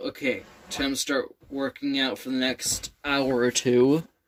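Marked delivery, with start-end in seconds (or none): none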